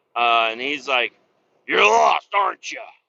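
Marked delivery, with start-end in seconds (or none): 1.6-2.8 put-on Southern accent, irritated, raised and high. Lost and asking for directions, quoting the man's reply in a mock-angry Southern accent. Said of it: "he sounded southern and angry".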